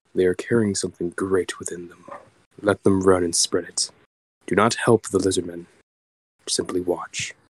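gentle, soft, hushed speaking voice. Leaning in close to the bug and speaking in a soft voice. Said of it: "Kind of in a soft voice speaks the bug".

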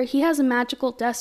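plain

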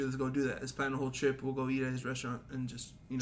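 ordinary talk

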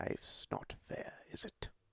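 put-on British villain voice. Saying a movie line as in the movie, asked to: Scar voice, British accent. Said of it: "you started talking in the British accent".

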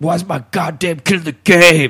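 high-pitched screaming holler. Retelling a teammate's dad at a game, imitating him screaming. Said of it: "his dad like screaming like".

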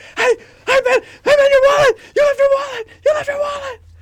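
escalating, frantic, desperate, very loud, shrill yell. Retelling a video bit of a man chasing a treadmill walker: imitating a desperate yell. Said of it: "he starts turning it up and up and up until he's in desperate".

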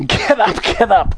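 shouting while roaring with laughter. He calls to the passengers flung onto the lift floor, shouting, roaring with laughter. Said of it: "cried Mr. Wonka, roaring with laughter".

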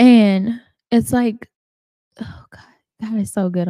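overcome, tearful voice, crying with joy. Recalling how God reminded her of her calling, crying tears of joy. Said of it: "These are tears of joy".

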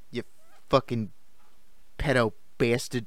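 put-on Brooklyn accent on every word. Repeating a quoted insult to show off a Brooklyn accent. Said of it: "Just like a unique Brooklyn accent".

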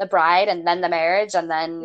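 plain

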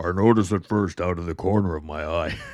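very loud, deepest possible voice. Asked by the other speaker to do the voice: imitating the deepest voice. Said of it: "now you gotta do the voice".

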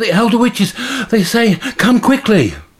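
breathless, very high, urgent gasping squeak. Narrating a story, the messenger bat reaches its mistress, in a breathless bat Bongo voice. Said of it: "a bat flies into the tower. It lands as light as a feather onto her wrist. "Mistress!" the bat pouts. "Emergency!" It's out of breath from flying so fast. ... Bongo squeaks excitedly".

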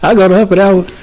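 high-pitched put-on female voice. Co-host imitates a woman in her little high-pitched voice: imitating Mama's voice. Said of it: "You talking like mama".

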